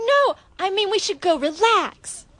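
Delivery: put-on New York accent. Acting a skit with a partner in a New York accent. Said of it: "do it with your New York accents".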